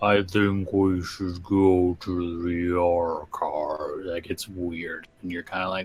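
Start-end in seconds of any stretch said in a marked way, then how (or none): 0.0-4.1 put-on very slow, deep, slurred slow-motion drawl. Voicing how a character's speech sounds to a player: slowed-down, deep, slurred voice. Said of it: "slowed down and deep and slurred".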